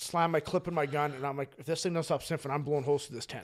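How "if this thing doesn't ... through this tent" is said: play-acted, fast, frantic, panicked blurting. Retelling being in a tent at night with something sniffing outside: retelling own panicked words. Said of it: "so I'm panicking".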